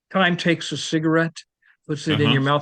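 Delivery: plain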